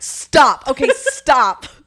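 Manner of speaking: angry voice. Retelling being tickled too long: imitating own angry protest. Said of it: "I get angry".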